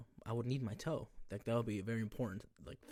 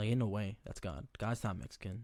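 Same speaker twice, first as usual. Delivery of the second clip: ordinary talk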